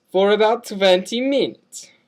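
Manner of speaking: fake, put-on Eastern European accent, vampire style. In a scene, a self-proclaimed vampire says how long he's been one, eastern european vampire accent. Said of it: "Why do you talk like that?".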